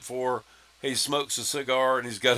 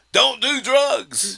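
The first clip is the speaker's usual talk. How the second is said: piercing, shrill, high, loud yell; 11 semitones higher, 6 dB louder than usual. Retelling a movie scene where she yells across the crowd: imitating Frances McDormand yelling. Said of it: "yells across the crowd".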